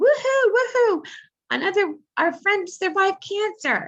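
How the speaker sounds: very high, swooping, sing-song whooping cheer. Retelling how nurses greeted the speaker at the hospital, imitating cheering nurses. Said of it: "these nurses were cheering".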